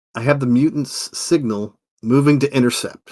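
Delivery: normal talking voice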